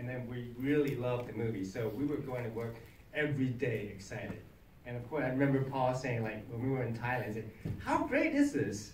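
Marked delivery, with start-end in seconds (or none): 7.8-8.9 very high, drawn-out, put-on English accent. Recalling what Paul said while you were in Thailand for the movie, imitating Paul's English accent. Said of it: "With his English accent".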